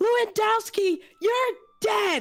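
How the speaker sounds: fuming, very high, very loud battle-cry yell. Charging at a character in the game, very loud charging shout. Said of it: "I'm purposely being very loud".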